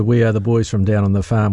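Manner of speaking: ordinary talk, nothing marked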